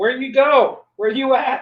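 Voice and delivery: very loud, very high, drawn-out yelling scream. Voicing a character yelling for Spine Splitter: screaming. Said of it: "Just screaming".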